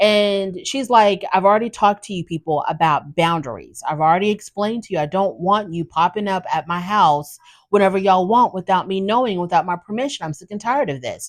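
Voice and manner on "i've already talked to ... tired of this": usual speaking voice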